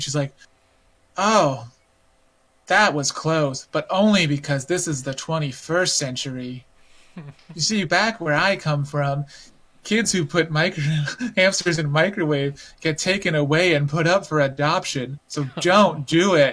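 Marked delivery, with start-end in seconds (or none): 1.2-16.5 slow, unhurried, deliberate character voice. Retelling a game scene where a girl microwaves a hamster: imitating a game character's slow speech. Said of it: "'Cause she talks really slow like that".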